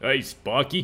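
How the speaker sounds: Brooklyn wise-guy style voice. Trying out a voice for a character, in a Brooklyn wise-guy style. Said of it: "wise guy style".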